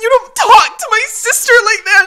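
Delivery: put-on sobbing, very high, trembling, tearful and defiant. Retelling confronting someone who upset her sister: reenacting a shaky voice. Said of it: "Your voice is shaking".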